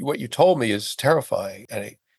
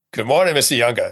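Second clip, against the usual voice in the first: put-on very strong, quick Boston accent. Retelling how an ICU nurse greeted him on waking, in a strong Boston accent. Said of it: "a voice with a very strong Boston accent".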